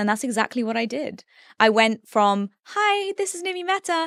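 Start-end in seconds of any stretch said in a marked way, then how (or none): 2.6-4.1 put-on very high-pitched, cringey old voice. Describing how they changed their voice, imitating their own old high-pitched voice. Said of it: "I used to have a really high-pitched voice".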